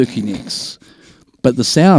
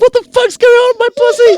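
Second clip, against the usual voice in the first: acted-out, very high-pitched, shrill woman's scream; 6 dB louder than usual. Telling a story, acting out what the woman screamed: imitating a woman screaming. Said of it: "she starts screaming like".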